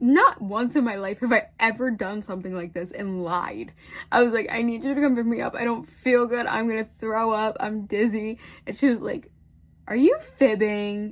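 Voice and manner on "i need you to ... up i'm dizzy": put-on tearful, crying plea. Retelling a phone call to Mom asking to be picked up, retelling a crying plea. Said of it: "I called my mom crying".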